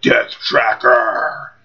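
heavy metal voice. Showing how a name wants to be said: metal voice. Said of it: "you wanna say it like a metal voice".

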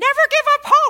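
shrill, squeaky, very high and loud voice. Quoting how Ione said it at the hospital: imitating a squeaky voice. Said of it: "she had a really squeaky voice".

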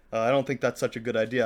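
ordinary delivery

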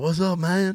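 put-on relaxed Cajun accent. Retelling how Justin came up and greeted them, in his Cajun accent. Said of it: "with his Cajun Kunas accent".

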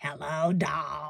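put-on low, deep-voiced lady voice. Recalling how a woman greeted Andy: imitating a lady's deep voice. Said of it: "the lady with the deep voice ... she's like, ... Like that".

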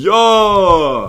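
put-on boxer voice. Acting out a scene where Rocky walks into the room: Rocky voice. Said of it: "It's Rocky in full leather outfit".

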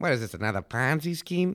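put-on, attempted Boston accent. A podcast host telling a history story throws in a quip, attempted Boston accent. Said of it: "That's my attempt at a Boston accent".

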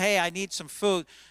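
ordinary talk, nothing marked

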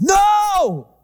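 loud, high-pitched yelling. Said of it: "Jessa yells".

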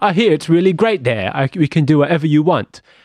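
put-on Cockney accent. Recapping a film, the speaker quotes a character inviting boys to Pleasure Island, Cockney accent. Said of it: "This guy's a Cockney accent for some reason".

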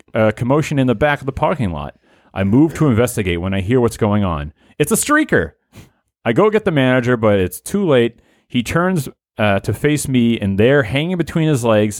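ordinary delivery

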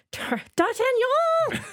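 put-on very high-pitched, stumbling foppish yell. Summing up a film's worst moment: Paul McGann's high-pitched fop shout. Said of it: "Paul McGann shouting".

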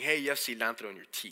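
plain

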